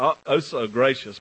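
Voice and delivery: ordinary talk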